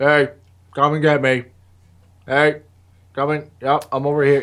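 all-calm, unbothered, easy calling out. Retelling a show scene where Eugene drives by calling the zombies: typical Eugene voice. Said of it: "that typical Eugene voice".

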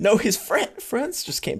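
put-on voice cracking, breaking on the verge of tears. Reenacting their own earlier answer to a friend, reenacting voice cracking near tears. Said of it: "my voice cracked because I almost started crying".

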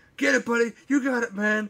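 very high-pitched screaming. Retelling a movie scene outside a speeding train: imitating Jon Voight screaming. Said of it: "Jon Voight's screaming at him".

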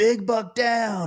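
acted excitement, very high-pitched burst. Retelling what he said at the tree stand after a shot, mimicking someone all excited. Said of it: "He's all excited".

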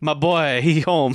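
imitated Cajun accent. Retelling what the mother on the bayou says: imitating a Cajun accent. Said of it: "I'm good with accents".

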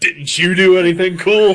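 mock, pointed, shrill accusing tone, pitched way up, loud. Retelling the other speaker's question back to them: imitating an accusatory tone.

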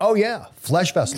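brazen, unashamed delivery. Retelling how Barney answers when picked: imitating Barney saying it unabashedly. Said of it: "Barney just says very unabashedly".

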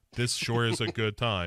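flat robotic monotone with a fake laugh. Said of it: "why are you just monotone all the time".

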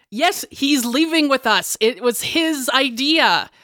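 high calling out, words drawn out. Answering in character that Finley is leaving with them: yelling out to someone. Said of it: "I'm gonna yell out".

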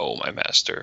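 mock grave, reverent, solemn, breathy near-whisper. Retelling how the woman in the scene speaks of her master: imitating a solemn line. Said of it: "she very solemnly says".

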